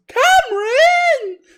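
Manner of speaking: highest-pitched possible squeal, very high and loud. Retelling how he called out the speaker's name: very high-pitched voice. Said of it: "like in the most high pitched voice ever".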